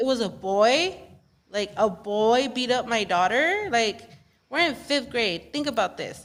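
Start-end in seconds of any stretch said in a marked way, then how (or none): none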